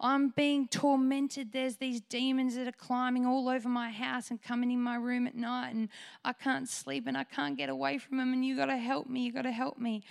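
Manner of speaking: mock tearful crying voice. Retelling a neighbour's plea at the front door, imitating someone crying. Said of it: "she just starts crying and she says".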